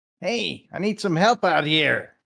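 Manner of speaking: put-on high, loud goblin voice. Saying a line in Goblin while others hide, in a goblin voice. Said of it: "in my best uh, Goblin voice".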